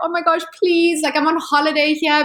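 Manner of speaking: acted sobbing voice. Retelling pleading with the police in France, fake crying plea. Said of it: "And I just like started crying".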